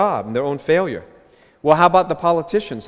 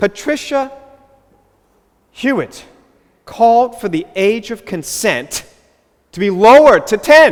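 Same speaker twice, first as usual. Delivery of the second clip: agitated, distressed outburst, raised and pitched up; 6 semitones higher, 6 dB louder than usual. Reporting a politician's call to lower the age of consent: upset. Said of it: "I'm sorry if I sound a little bit upset".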